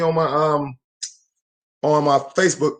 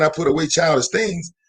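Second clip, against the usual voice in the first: usual speaking voice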